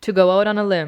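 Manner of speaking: quick, casual phrasing with words run together. Showing how we say the phrase when we talk: fast, words run together. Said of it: "we say it fast and it sounds like".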